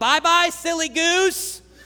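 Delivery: mock scream, loud and high, at the top of the lungs. Speaker retells Austin screaming from across the room: imitating Austin screaming. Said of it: "he screams at the top of his lung".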